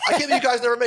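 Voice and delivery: high-pitched, incredulous laughing.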